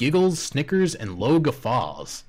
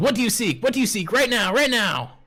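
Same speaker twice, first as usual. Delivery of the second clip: high, eager, excitable talking-dog voice; 9 semitones higher than usual. Voicing the excited dog who loves word games: excited talking dog voice. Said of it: "And he says".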